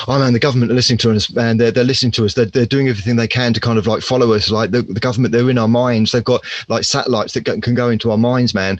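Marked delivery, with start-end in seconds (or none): none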